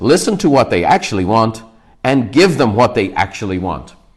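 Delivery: ordinary delivery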